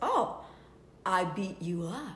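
put-on heavy, thick Spanish accent, very low pitch. Retelling a man's phone call to a woman he doesn't know, imitating a thick spanish accent. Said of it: "he's a man that's got a thick Spanish accent".

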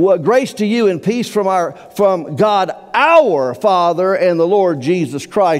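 "our" stressed, with the phrase slowed.

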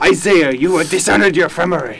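fake angry Japanese accent in a man's voice. Teasing a fellow player who forgot a tip, in a mock-angry japanese man voice. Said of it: "my angry Japanese man is way better".

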